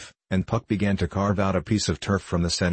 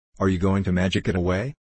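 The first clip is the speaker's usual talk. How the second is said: usual speaking voice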